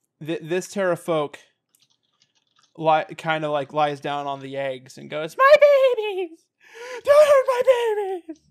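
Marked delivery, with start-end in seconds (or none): 5.4-8.3 terrified pleading tone, much higher, louder. Narrating a game, the speaker voices a surrendering creature lying on its eggs: terrified pleading. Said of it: "So they're scared as hell".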